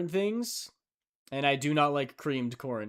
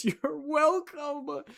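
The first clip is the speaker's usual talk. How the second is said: very high, weepy, tearful fake sobbing voice; 10 semitones higher than usual. Acting out a made-up meeting where The Rock says only this: tearful The Rock impression. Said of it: "a single tear rolls down his cheek as he says".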